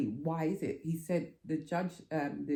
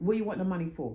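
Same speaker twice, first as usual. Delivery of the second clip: curt, snippy clerk voice full of attitude; 2 semitones higher, 3 dB louder than usual. Retelling what the bank worker asked: imitating bank worker with attitude. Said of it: "That's what the woman said to me with attitude".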